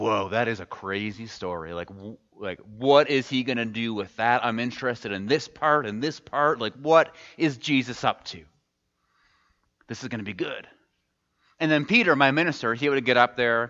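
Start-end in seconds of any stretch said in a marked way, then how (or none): none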